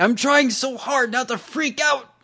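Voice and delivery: put-on excited shout, very high. Retelling how a rock star on stage shouted off mic, mock shouting. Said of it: "he just shouts".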